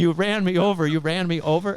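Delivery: put-on screaming, said twice over. Retelling being run over by a car: retelling own screaming. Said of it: "And I was screaming".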